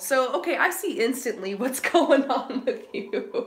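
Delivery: words broken up by laughing. Doing a card reading for someone, laughing while talking. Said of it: "I'm sorry I'm laughing".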